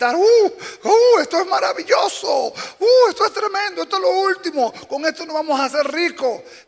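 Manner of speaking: very high, shouted cries. Retelling a story, voicing the man in the bathroom with the cream, imitating someone shouting. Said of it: "de repente empezó a gritar".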